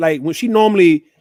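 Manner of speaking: ordinary delivery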